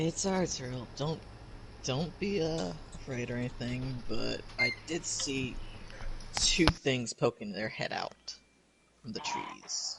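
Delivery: slow, soft whisper. Whispering a warning to a companion in character: whispering to zariel. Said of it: "I'm just gonna whisper to Zariel".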